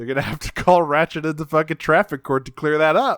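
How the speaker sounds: ordinary delivery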